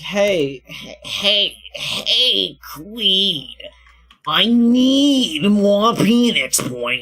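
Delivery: very slow, nagging, needy begging tone. Retelling how the co-streamer asked to stream again: imitating someone pestering. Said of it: "That's what you sound like".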